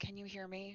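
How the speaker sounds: hushed, very quiet, gentle delivery. Voicing a character who goes up to someone in distress, very gentle. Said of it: "just very gently say".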